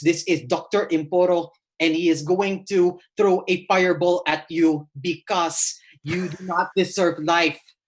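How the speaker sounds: wizard character voice with Filipino accent. Actor showing how they voiced their character on screen: Doctor Imporo's Filipino accent. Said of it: "And so I would talk like this".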